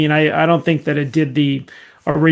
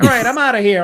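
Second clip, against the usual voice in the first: offhand, dismissive cartoon clown character voice; 8 semitones higher than usual. Retelling a Simpsons scene where Krusty records a talking doll: Krusty the Clown voice. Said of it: "And then he's like".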